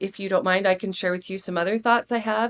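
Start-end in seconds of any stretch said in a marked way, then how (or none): none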